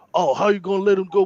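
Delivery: very high-pitched, acted-out angry ranting outburst. Retelling a queue at an ATM, imitating a man going off angrily. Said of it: "This guy starts going off".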